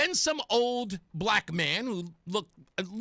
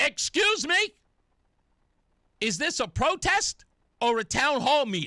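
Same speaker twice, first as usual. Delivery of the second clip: high, drawn-out, loud shout; 5 semitones higher, 4 dB louder than usual. Retelling shouting a question from the back of a crowd: retelling his own shout. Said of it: "I shout from the back of the crowd".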